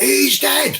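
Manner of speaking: put-on shouting. Retelling how a man kept answering an officer about his brother, repeating the same words. imitating someone shouting. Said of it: "And I was quite camp".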